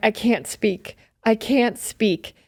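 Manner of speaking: play-acted, overcome, slow, tearful crying with joy. Retelling hearing twin news on the phone, imitating own past crying. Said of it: "and I'm just crying".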